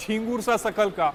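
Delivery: ordinary talk, nothing marked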